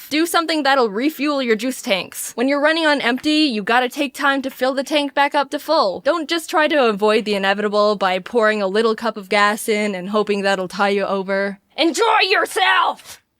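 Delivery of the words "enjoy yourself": high, raised shouting yell. Giving self-care advice to the audience, yelling. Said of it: "I'm not yelling at you".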